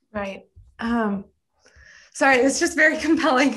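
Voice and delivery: voice catching, choked up, fighting back tears. Responding to another speaker's worries about students, holding back tears. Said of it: "I'm, like, crying over here".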